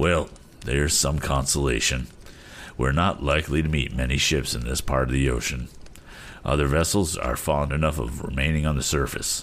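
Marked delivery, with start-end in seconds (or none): none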